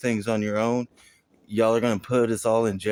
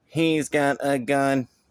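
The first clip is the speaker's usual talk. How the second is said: mock, very slow, drawn-out, sarcastic robot voice; 4 semitones higher than usual. Imitating a robot falsely warning someone: sarcastic robot voice. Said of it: "sarcastically gonna start going".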